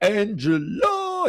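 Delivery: Angela stressed hard and weighty. Announcing breaking news of the masked couple's identity: heavy emphasis on Angela. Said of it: "You got to say it like that because, I mean, what she did, you know, you got to put an emphasis on the name".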